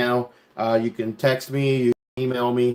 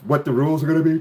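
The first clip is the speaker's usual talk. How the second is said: talking through a yawn, higher; 3 semitones higher than usual. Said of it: "I'm yawning".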